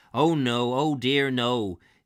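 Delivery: put-on West Country accent.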